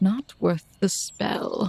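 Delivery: mumbled grumble, mostly to oneself. Voicing a character muttering aside in a scene, mumbling under her breath. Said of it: "she kinda mumbles under her breath".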